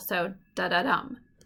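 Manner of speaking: anapest da-da-dum with stress on the final dum. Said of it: "two unstressed syllables followed by a stressed syllable".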